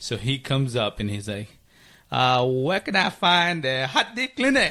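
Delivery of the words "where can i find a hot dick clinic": put-on Vietnamese accent, pitched up. Retelling what a man who came up to her asked, in a put-on vietnamese accent. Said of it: "I try to do the Vietnamese accent".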